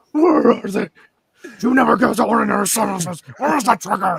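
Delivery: put-on gruff superhero growl. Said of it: "You sound like you had throat cancer".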